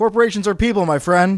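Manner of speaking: loud, high-pitched yell. Retelling a politician's remark yelled to a crowd: imitating Mitt Romney yelling. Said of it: "He yelled it to a crowd".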